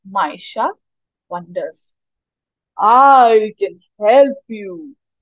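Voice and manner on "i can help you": big, deep, booming voice, spoken very slowly. Reading a firefly squid offering help to the main character: deep booming voice. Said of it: "a deep booming voice says".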